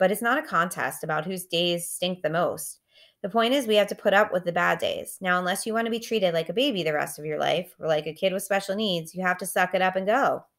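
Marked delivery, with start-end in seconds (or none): none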